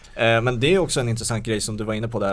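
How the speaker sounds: ordinary talk, nothing marked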